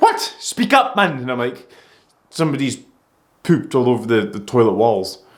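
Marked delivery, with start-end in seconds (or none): 0.0-1.2 very high, put-on Geordie accent. Retelling a conversation, quoting a woman's reply, imitating a geordie accent. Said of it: "she had a Geordie accent".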